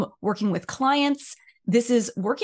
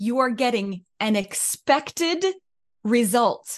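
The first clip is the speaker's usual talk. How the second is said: emphatic delivery with pointed emphasis. Repeating a point for the people in the back, a little louder. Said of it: "say that again a little louder".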